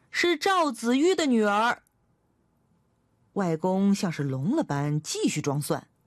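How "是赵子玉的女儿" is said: high shout at full voice, voice raised. A girl repeats her answer to her grandfather, who pretends not to hear: raised-voice shout. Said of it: "我提高嗓门喊道".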